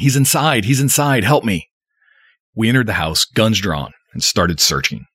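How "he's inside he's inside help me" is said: frantic, panicked, hysterical, high-pitched shrieking scream. Reading a story, voicing a woman whose ex-husband is inside, screaming hysterically. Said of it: "She started screaming".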